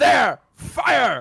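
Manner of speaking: very loud, very high, rough barked shout. Voicing a character in the game calling out an order: shouting an order. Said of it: "and he shouts".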